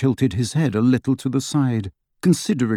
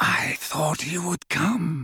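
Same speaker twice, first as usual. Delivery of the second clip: high, clear voice held high; 5 semitones higher, 7 dB quieter than usual. Narrating a novel, voicing Voldemort's line, in his high, clear voice. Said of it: "said Voldemort in his high, clear voice".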